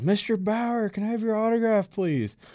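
very high, polite, eager yelled holler. Retelling calling out to a starting pitcher for an autograph, retelling own past yell. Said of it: "And I just yelled".

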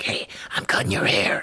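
low, soft, unvoiced whisper. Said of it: "whispers into your ear".

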